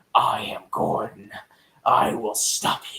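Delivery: whispered, over-the-top bad cop voice. Mocking a co-star who plays Gordon over the top, in a Batman voice. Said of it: "stop talking like Batman".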